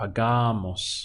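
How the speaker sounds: pagamos with stress on middle syllable ga. Pronunciation lesson, stressing the syllable before mos: stress on ga in pagamos. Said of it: "So we stress the syllable right before mos".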